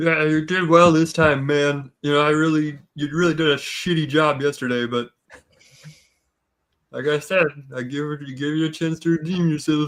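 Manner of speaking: put-on deliberately slurred drunken speech. In a game, a character answers the waiter who praised his drinking: slurring words. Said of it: "I'm like slurring my words intentionally".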